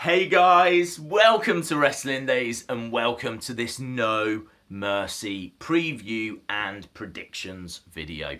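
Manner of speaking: very slow, stretched-out, drawn-out delivery. Host opening a wrestling preview and predictions video, very slow. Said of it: "I said that so slow then".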